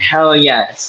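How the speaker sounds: ordinary delivery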